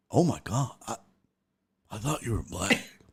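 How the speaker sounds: soft, hushed whisper under the breath. Retelling how people would whisper to him: imitating someone whispering. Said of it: "They would whisper it".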